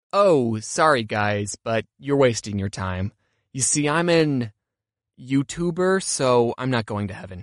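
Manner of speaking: low-pitched, slow, bone-dry delivery.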